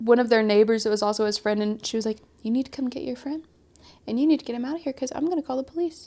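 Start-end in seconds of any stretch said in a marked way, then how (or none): 2.4-6.1 soft, hushed, even-toned voice. Retelling what a woman said when she phoned a neighbor, softly, even-toned. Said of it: "she just says it so softly, so even toned".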